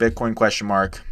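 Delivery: ordinary delivery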